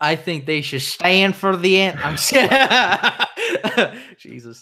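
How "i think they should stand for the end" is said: stock, generic Southern American man's accent. Discussing police brutality protests, then switching to a generic southern man voice. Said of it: "Generic uh, Southern man voice".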